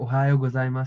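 normal talking voice

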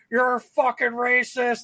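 acted jeering, heckling shout, super loud. Retelling heckling a batter every time he came up; retelling a super loud shout. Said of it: "like super loud".

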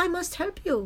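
put-on speaking with Bangladeshi accent. Retelling how a little kid stopped and spoke to you, imitating the kid's Bangladesh accent. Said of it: "with her little Bangladesh accent".

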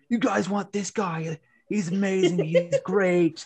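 acted, high, hyped-up yell. Retelling what a man yelled at the people in line; retelling a man yelling. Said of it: "he is like yelling".

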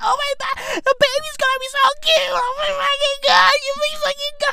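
mock very high, weepy sobbing gush. Mocking Gen Z fans on YouTube over a pregnancy announcement, imitating people crying. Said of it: "People are legit crying".

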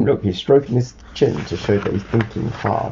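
plain

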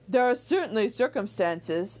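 plain reading voice

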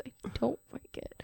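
put-on quiet mutter. Speaker retelling what someone said in a clip, under his breath. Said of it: "Under his breath".

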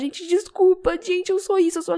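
mock tearful, sobbing, very high crying voice. Retelling an influencer's tearful stories, imitating Giana Mello crying. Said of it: "chorando. Falava".

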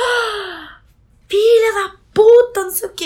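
put-on indignant outburst, very high and very slow. Recounting seeing who was tagged in the photo, retelling her indignant outburst. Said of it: "Eu fiquei, tipo assim, indignada".

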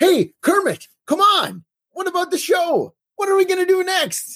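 play-acted very high, enthusiastic game-show announcer voice. Describing Jenny cheering up Kermit, quote her line imitating Jenny's enthusiasm. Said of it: "I love Jenny's amazing enthusiasm when she says".

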